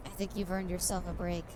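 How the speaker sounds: very soft, close, gentle, hushed murmur. Acting out his words to the programmer, in a very soft voice. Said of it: "he says in a very soft voice".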